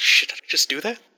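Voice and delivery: fast, mumbled mutter under the breath. Narrator voicing a character who just sat back down: muttering to himself. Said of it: "he just says that just mutters it".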